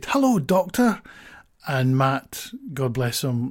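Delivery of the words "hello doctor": put-on child's high, loud shout. Retelling how an older boy looked up and greeted someone: retelling a child's shout. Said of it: "just looked up and shouted".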